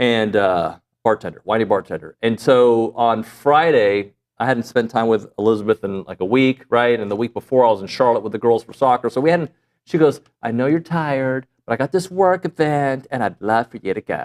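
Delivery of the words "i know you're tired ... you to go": teasing, mocking, caricatured put-on voice. Retelling what Elizabeth said to the speaker, imitating Elizabeth in a put-on voice. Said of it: "she hates when I use that voice on her".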